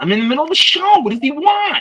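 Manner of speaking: shrill, very high, loud yelling. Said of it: "Nick's the one yelling at him".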